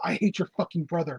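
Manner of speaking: very hushed, soft whisper, very quiet. Retelling what he whispered in someone's ear, as a soft whisper. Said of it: "in your ear he softly whispered".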